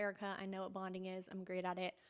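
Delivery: ordinary talk, nothing marked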